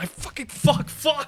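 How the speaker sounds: high-pitched, flustered, panicked, rushed swearing. Struggling through a tricky section after hitting the wall, panicked. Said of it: "I'm panicking".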